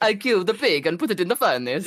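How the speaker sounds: put-on Dutch accent, heard as Italian. Showing how someone thinks the dutch listener would sound: imitating a dutch accent. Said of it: "you would sound like".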